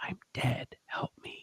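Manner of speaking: put-on very quiet, faint, breathy girl's whisper. Retelling a voice heard on a played-back tape: imitating a girl's whisper. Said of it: "a young woman or a girl's voice whispering".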